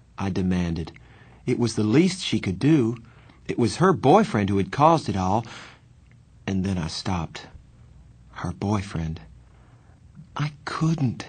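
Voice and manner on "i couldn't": hushed, quiet, desperate, slightly high-pitched voice. Narrator reads a woman refusing a demand, quiet, desperate voice. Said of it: "she said in a quiet, desperate voice".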